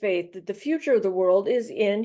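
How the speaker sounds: ordinary delivery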